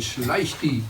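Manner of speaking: ordinary talk, nothing marked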